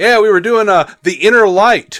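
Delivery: loud, high, jeering parroting tone. Retelling what the producers said on the panel: mocking imitation of the producers. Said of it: "the fucking producers got up there and went".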